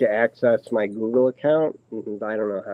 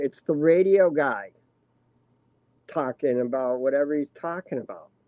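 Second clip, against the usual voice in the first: acted half-shouted, mild yell; 4 semitones higher than usual. Retelling yelling at a work phone while driving: retelling yelling at the phone. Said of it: "I'm yelling at the phone going".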